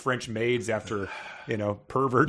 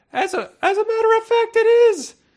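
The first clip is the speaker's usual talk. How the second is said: piping voice, very high and very loud; 9 dB louder than usual. Reader voices a man claiming to be the security guard: high piping voice. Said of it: "That was piping, I guess".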